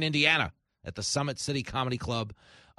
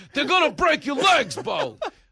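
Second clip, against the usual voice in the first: put-on very high, shrill, drunken heckling holler; 10 dB louder than usual. Retelling a drunk heckler in left field: imitating a drunk fan yelling. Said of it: "a drunken left field just yelling".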